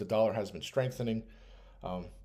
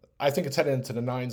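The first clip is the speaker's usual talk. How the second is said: ordinary talk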